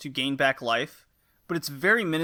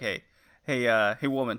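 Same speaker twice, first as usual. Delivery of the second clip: joking, playful, jokey delivery; 4 semitones lower than usual. Imagining a friend flirting in the game: imitating Joey joking. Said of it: "I can see Joey talking. He's like".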